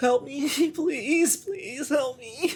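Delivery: put-on very high-pitched, slow, tearful crying little girl voice. Voicing a frightened little girl who begs the group for help: crying child's plea. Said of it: "she is looking side to side, nervous, crying ... says".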